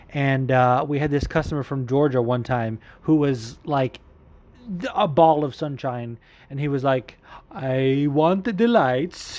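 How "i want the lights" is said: put-on bad Italian-sounding accent. Retelling what a car dealership customer said: imitating him, bad Italian-ish accent. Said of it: "sounds like a bad, like, Italian friggin' accent".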